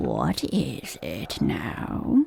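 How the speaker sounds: very low, deep, husky, hoarse whisper. Narrating a story, the frog asks its question in a deep, hoarse whisper. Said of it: "the frog said in a deep, hoarse whisper".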